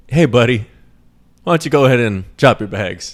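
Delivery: falsely casual, fake-friendly, chummy buddy tone. Imitating police officers trying to sound cool: imitating cops' fake-friendly tone. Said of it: "using, like, little, like, kiddie words".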